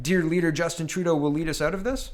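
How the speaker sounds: exaggerated, strongly rising question-like inflection. Commenting on the government's response, with a big question mark in voice. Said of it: "with a big question mark in my voice".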